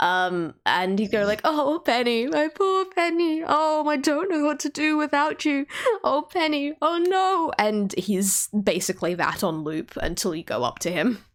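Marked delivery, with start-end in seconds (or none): 1.4-7.5 sobbing, tearful, high-pitched male weeping. Voicing a man weeping into his drink over penny, weeping man. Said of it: "you can now kind of hear what he's crying about as he still like weeps".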